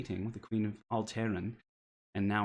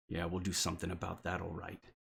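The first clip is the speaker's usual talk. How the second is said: growling half-orc voice, quieter; 3 semitones lower, 5 dB quieter than usual. Voicing a half-orc who answers from behind: growling half-orc voice. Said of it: "you hear the growl of the half-orc".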